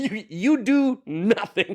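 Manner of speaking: mock yelling. Retelling what the other speaker yelled at someone: imitating someone yelling. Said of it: "such a weird thing to yell at somebody".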